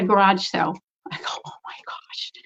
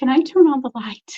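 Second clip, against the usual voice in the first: put-on small, childlike little child's voice; 4 semitones higher than usual. Retelling asking permission at the top of the stairs, in a little child's voice. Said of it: "I just said in the chi- a child's voice".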